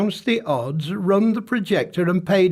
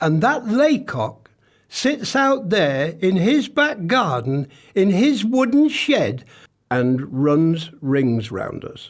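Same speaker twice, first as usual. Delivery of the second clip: usual speaking voice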